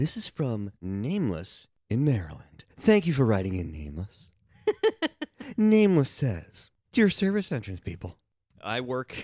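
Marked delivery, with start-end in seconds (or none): 0.0-8.2 on-air radio announcer delivery. Reading a listener's letter aloud to a co-speaker: radio host voice. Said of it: "I could have done the whole thing in that voice".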